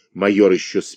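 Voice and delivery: plain reading voice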